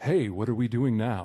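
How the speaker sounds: deep commercial pitchman voice. Describing how a game character talks, doing the Old Spice guy voice. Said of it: "he talks like the Old".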